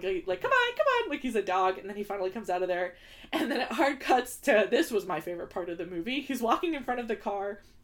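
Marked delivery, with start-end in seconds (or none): 0.3-1.1 very high-pitched, urging yell. Retelling a movie scene where she yells at him, imitating her yelling. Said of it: "yelling at him, like".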